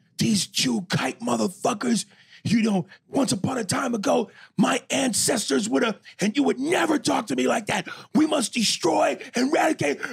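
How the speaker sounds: put-on shrill, furious, top-of-lungs raging yell. Retell the recording you were played of a man yelling, imitating someone yelling in rage. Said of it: "the rage in which he's like".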